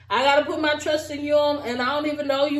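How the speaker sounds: usual speaking voice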